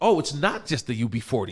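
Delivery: ordinary talk, nothing marked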